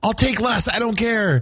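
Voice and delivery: acted, very high-pitched begging plea. Retelling begging a server not to overfill a cookie bucket: retelling own begging. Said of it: "begging the person not to overfill the bucket".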